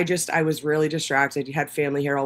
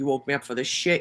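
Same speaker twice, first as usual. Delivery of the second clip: put-on aggravated old dog voice. Talking about an old pet, imitating Gunna, mock-aggravated. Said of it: "now she's like aggravated".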